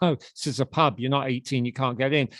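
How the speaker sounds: ordinary talk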